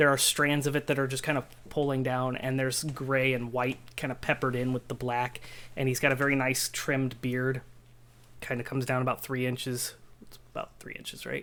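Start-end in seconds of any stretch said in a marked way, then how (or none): 10.2-11.3 low, soft whispered aside. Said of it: "GM whispering an aside".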